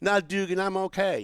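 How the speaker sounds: put-on Southern accent. Quoting a woman's reply when he offered to walk her to her car, cute Southern accent. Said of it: "this really cute Southern accent".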